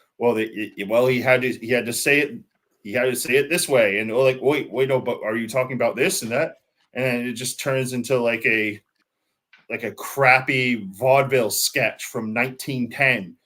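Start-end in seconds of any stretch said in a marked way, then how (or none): none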